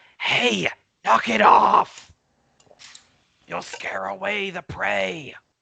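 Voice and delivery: rough, scratchy, screeching high creature voice. A game narrator voices a creature on a mushroom, in a scratchy, screechy voice. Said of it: "it says in its like scratchy, screechy voice".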